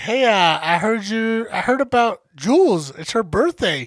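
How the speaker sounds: normal talking voice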